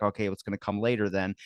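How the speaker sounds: ordinary delivery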